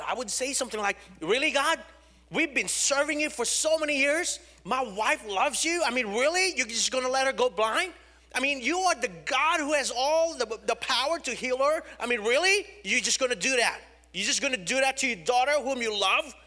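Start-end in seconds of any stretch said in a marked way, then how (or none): 1.2-16.2 put-on bitter, accusing, angry pleading, pitched high. Retelling past words to God about a wife going blind: retelling bitter anger at God. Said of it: "I was bitter, I was angry towards God".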